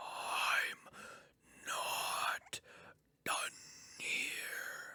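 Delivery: drawn-out, very hushed, creepy ghostly whisper. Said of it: "Why did it say it like that?".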